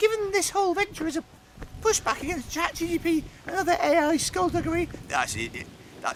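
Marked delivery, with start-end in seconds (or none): 0.0-4.9 put-on squeaky, very high, raised voice. Voicing a man he doesn't know, as he imagines him: squeaky Gareth voice. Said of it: "I'll do it in what I imagine Gareth's voice is like now".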